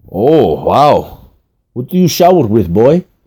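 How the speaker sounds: put-on speaking with a Russian accent. A woman takes off the narrator's sock and speaks to him, Russian accent. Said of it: "said in her Russian accent".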